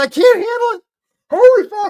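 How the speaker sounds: breathless, high, loud, words tumbling through laughter. Reacting to a clip with another speaker, laughing while talking. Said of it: "I gotta take a breath".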